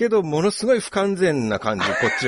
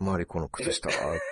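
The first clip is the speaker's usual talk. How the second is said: put-on older man voice, much lower, quieter; 6 semitones lower, 9 dB quieter than usual. Quoting a remembered catchphrase as it was voiced: middle-aged man's voice. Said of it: "おっさんの声ですから".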